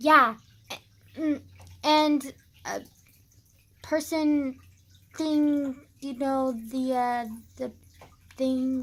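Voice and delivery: stumbling, filler-word speech. Showing how they really talk, halting and full of fillers. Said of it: "that's literally how I talk".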